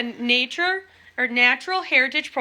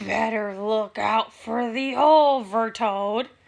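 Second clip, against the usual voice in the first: slow, dark, ominous and creepy sinister voice; 3 semitones lower than usual. Reading a story where Ben catches up with Ryan after class, in a dark, sinister voice. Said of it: "in a dark, sinister voice".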